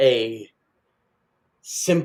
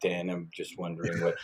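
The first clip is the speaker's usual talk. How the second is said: flat, zero-energy delivery. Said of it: "not with zero, um, energy in your voice".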